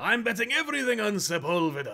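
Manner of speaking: very high, shrill, loud voice. Discussing a comic's artist, saying the artist's name in a Watto impression. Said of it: "That's my Watto impression".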